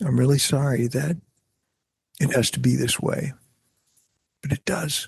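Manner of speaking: even, calm, understated chilling menace. An actor recalls how he said lines on camera; soft, whispered delivery. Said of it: "the more soft you get".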